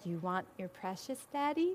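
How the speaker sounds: very quiet, low, creepy, hushed little voice. Retelling what a five-year-old son said to his dad, in the creepiest little voice. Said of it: "In the creepiest little voice".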